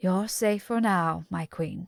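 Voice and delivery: steady, soothing, low and calm voice. Narrator reads a man speaking to her in her lowest hour, low, calm voice. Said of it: "he says in that low, calm voice of his".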